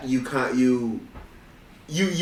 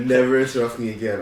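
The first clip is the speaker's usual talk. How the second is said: ordinary talk, nothing marked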